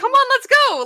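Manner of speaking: very high, eager, fired-up, excited burst. Describing Neo not noticing the speaker is miserable: voicing Neo, mock-excited. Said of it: "Like, very excited".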